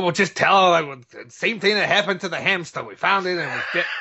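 fast, over-the-top, put-on, grumpy, irate dad accent. Recounting a movie scene, quoting the grumpy father: put-on grumpy dad accent. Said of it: "it's a great accent".

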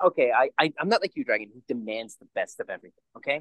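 ordinary talk

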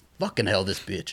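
ordinary talk, nothing marked

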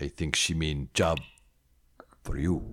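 low-pitched, simple-sounding put-on great-ape voice. A great ape companion answering an elf about a note, Boric great ape voice.

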